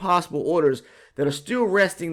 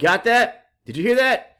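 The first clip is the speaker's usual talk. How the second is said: ordinary talk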